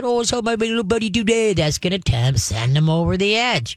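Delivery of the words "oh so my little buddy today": put-on high-pitched baby-talk voice. Speaker showing how people talk to an overexcited dog, in baby talk. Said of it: "don't let people do the baby talking".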